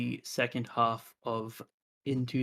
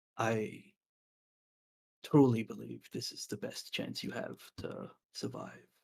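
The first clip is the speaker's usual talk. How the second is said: low, soft, deep voice; 7 dB quieter than usual. Voicing the deep voice as it speaks to the player once again: deep voice. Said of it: "the deep voice says once again".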